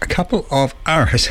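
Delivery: each word stretched out, very slow, unhurried. Radio presenter welcoming listeners to the weekend show, said slowly. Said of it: "said slowly".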